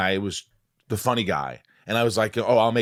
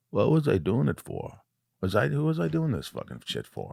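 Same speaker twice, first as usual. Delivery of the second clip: put-on swooping ninety-year-old voice; 3 semitones higher, 5 dB quieter than usual. Imagining oneself at ninety: impression of oneself at ninety. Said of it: "That's a good impression of you at ninety".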